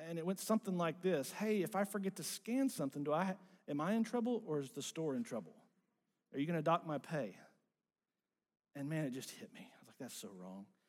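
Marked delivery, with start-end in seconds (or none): 1.3-7.3 put-on pointed, snide, needling sarcasm. Recalling someone coming to help them at the store, speaker reenacts their own sarcastic comment. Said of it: "I make this sarcastic comment".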